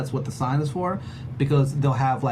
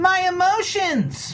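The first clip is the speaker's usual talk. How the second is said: very high-pitched put-on voice; 3 dB louder than usual. Doing the announced impression of Lisa Friedrich: Lisa Friedrich impression. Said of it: "here's my Lisa Friedrich impression".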